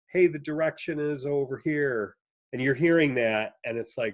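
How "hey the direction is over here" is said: ordinary delivery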